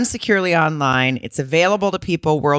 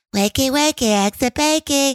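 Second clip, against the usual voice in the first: put-on little baby voice, much higher pitch; 10 semitones higher than usual. Retelling how a woman talked when trying to be romantic, in a little baby voice. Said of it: "she used to talk in a little baby voice".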